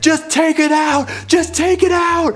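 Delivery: high, slow, desperate yelling. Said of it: "my brother yelled at him".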